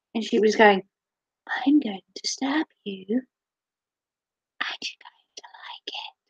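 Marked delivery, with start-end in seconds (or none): 1.6-6.1 menacing, very quiet, slow, creepy whisper. Retelling a girl twiddling a knife and threatening the speaker, imitating a quiet creepy threat. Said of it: "threatening to stab people in a really quiet voice".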